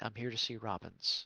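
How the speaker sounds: low, very quiet, very hushed half-whisper. In a role-play scene, a character comes up and asks a man, in a low half-whisper. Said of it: "in a low whisper tone".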